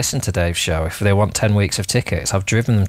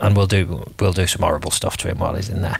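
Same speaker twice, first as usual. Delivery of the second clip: muttered under the breath, much lower; 3 semitones lower than usual. Adding an aside during a chat, muttered under breath. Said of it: "when you say it under your breath".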